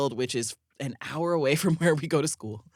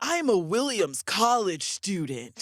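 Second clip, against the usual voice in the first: deliberate, scolding tone, yelling; 4 semitones higher than usual. Retelling a friend yelling at post office staff on the phone: imitating someone yelling. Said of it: "yelling at these people at the post office".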